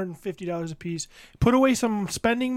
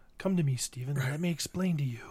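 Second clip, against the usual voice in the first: acted calm, low, soft, soothing, coaxing voice; 6 semitones lower, 7 dB quieter than usual. Describing a man who puts an arm around you, imitating a soothing voice. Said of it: "talks in that kind of soothing voice".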